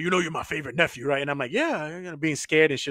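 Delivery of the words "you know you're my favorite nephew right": menacing, very angry, threatening man's voice. Retelling what his uncle always said to him, imitating an angry uncle. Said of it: "it sounded like he was real angry".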